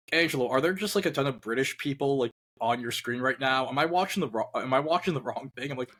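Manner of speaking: ordinary talk, nothing marked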